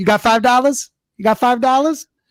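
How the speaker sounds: put-on high-pitched Southern accent. Recalling a past bit, imitating Alabama Leprechaun newscast guy. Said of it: "I was trying to do that guy's voice".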